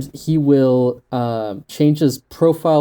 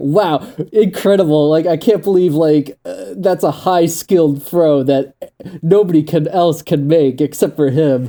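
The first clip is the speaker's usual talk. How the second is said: mock ironic, sarcastic, gushing amazement; 2 semitones higher, 3 dB louder than usual. Retelling a troll's posts about a short pass: imitating Barry's sarcastic praise. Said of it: "he's just a troll".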